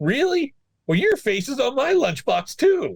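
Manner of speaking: very high put-on voice with swooping pitch. Retelling a voice actor talking on the phone to a little girl: SpongeBob voice. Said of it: "he's doing the voice".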